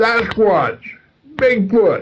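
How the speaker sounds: sudden acted shriek, very high-pitched scream. Retelling how the passenger reacted on seeing two Sasquatch in the road: imitating someone screaming. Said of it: "just screamed out".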